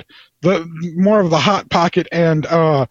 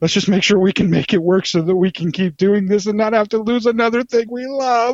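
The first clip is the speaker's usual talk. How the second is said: emotional, earnest voice full of feeling; 4 semitones higher than usual. Talking about not losing the show to another hiatus, the speaker sounds emotional. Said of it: "I'm feeling emotional today".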